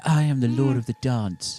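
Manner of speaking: showy, flamboyant stage-show dance-star voice. Voicing a dancing character doing an impression: Michael Flatley impression. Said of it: "she's doing a Michael Flatley impression".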